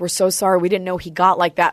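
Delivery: ordinary delivery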